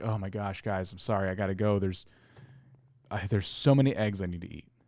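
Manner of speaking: put-on burdened, weary voice. Imitating someone leaving to eat eggs as if a chore: burdened by a chore. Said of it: "it almost sounds like this chore".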